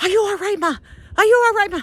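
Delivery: very high, hurried, rapid yelling out. A mother retells her daughter yelling at her after she fell: imitating daughter yelling. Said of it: "she's yelling at me".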